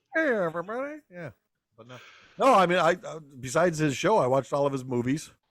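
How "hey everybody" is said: put-on comic man-child voice, pitched higher. Echoing the other speaker's line in a Pee Wee Herman voice. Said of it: "Pee Wee Herman impression".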